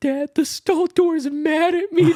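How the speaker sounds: very high, tearful, sobbing wail. Retelling a call to his dad while high, imitating his own crying. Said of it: "I literally just start crying on the phone, like".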